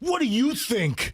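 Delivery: play-acted snide sarcasm. Quoting someone's reply to a customer, in a mock-sarcastic tone. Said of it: "it was a sarcastic, like".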